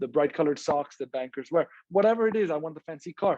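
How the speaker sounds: usual speaking voice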